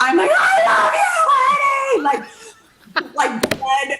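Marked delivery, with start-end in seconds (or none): 0.3-2.0 all-out acted scream, very high, shrill, drawn-out. Telling Jimmy about screaming in the Forum crowd: retelling screaming our heads off. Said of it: "when I say screaming our heads off".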